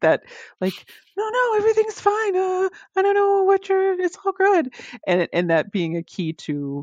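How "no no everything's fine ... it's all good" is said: very high, squeaky, breezy dismissive voice. Acting out a quick brush-off line: high-pitched voice. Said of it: "I think of the high-pitched voice".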